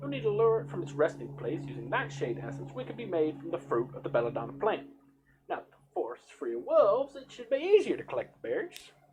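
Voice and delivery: put-on very loud, booming Southern accent. Storyteller voicing a character in a fantasy adventure, southern accent. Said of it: "everybody's just gonna have Southern accents".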